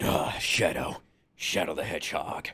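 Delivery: breathy, very quiet, slow, drawn-out hushed whisper. Doing a requested Shadow the Hedgehog voice for the others: Shadow the Hedgehog voice. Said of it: "do your Shadow voice right now".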